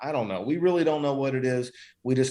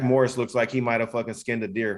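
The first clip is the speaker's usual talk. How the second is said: plain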